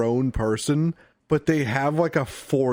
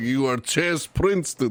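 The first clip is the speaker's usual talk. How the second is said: heavy, thickly laid-on put-on Russian accent. Retelling the headmaster addressing the students; thick russian accent. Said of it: "this thick Russian accent guy".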